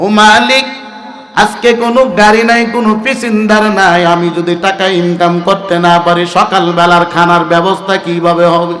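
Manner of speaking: ordinary delivery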